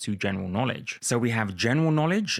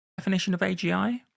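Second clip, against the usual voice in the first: pitch climbing through A G I; 9 semitones higher than usual. Describing a paper's proposed definition: rising tone on AGI. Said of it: "I say with a rising tone".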